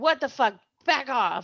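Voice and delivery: angry outburst held in check. A player uses Intimidation to scare everyone away: yelling. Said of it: "I just yell".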